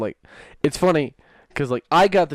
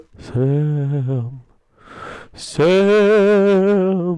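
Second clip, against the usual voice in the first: haunting, high ghost voice, name stretched long; 6 semitones higher, 5 dB louder than usual. Telling a joke, a voice calls to Sam sleeping in bed: ghostly, haunting voice. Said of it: "he hears a ghostly, haunting voice".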